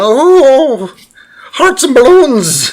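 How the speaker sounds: very high, very slow mascot voice, stretched oh. The speaker shows how a character originally sounded, doing a Lucky the Leprechaun voice. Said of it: "originally sounded like fucking Lucky the Leprechaun".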